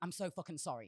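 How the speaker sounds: put-on frantic, apologetic tone. Retelling kneeling on the floor after an accident: imitating an apologetic plea. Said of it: "I'm apologetic".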